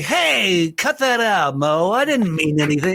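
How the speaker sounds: put-on voice, pushed through the nose. Showing how Larry Fine is played in a Three Stooges team: nasal Larry Fine voice. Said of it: "he kind of does everything in the, in nasal".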